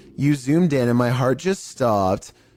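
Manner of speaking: normal talking voice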